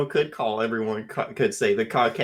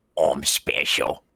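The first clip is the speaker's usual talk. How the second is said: low, deep, ruddy little goblin voice; 9 semitones lower than usual. An enchanted book speaks whenever it is opened, in Scrump's ruddy little goblin voice. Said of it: "you hear in this fucking ruddy li- little goblin voice".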